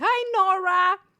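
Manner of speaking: shrill, very high-pitched screaming. Greeting someone by name on stream: screaming a greeting. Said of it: "Why am I screaming like that?".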